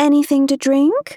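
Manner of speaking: very high, squeaky, love-dripping doting pet voice. A woman on the aisle asks her daughter in the middle seat: squeaky, love-dripping voice. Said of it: "in the squeaky, love-dripping voice used interchangeably for pets and children".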